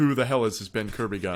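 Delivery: ordinary delivery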